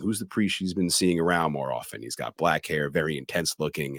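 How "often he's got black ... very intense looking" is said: ordinary talk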